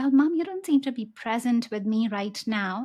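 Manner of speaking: usual speaking voice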